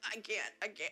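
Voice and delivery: tearful crying voice. Refusing to taste a vegetable when asked to try it: crying. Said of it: "She cries".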